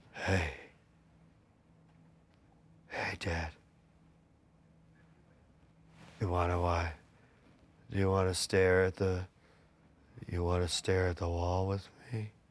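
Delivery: put-on low, slow, spaced-out, drowsy kid voice. Role-playing a medicated child talking to dad: acting out a medicated child. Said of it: "an example of what a medicated child would be like".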